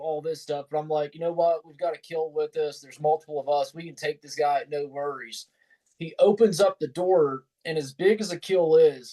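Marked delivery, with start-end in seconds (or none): none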